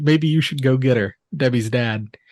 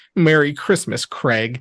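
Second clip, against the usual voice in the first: plain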